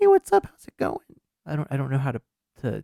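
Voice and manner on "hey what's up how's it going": very high-pitched, raised, strained-up voice. Telling another speaker a woman's voice is a front, imitating a very high-pitched voice. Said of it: "she has like a very high pitched voice".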